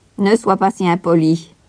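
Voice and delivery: interrupting. The governess interrupts Heidi, who has just asked her name in return, cutting in. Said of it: "coupa la gouvernante".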